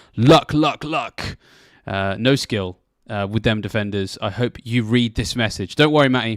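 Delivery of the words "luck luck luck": words punched out, louder and pitched up, heavily emphatic. Reading out a message written in all capitals: said a bit louder. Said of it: "I will try and say this a bit louder".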